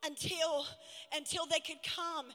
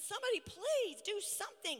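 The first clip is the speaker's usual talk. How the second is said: put-on desperate, choking woman's scream; 4 semitones higher than usual. Recounting a woman in a restaurant who can't breathe: retelling a scream. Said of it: "she's screaming".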